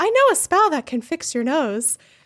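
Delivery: gentle sweet small voice. Quoting Luna offering to fix Harry's nose: Luna sweet little soft voice. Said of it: "her, like, sweet little soft voice".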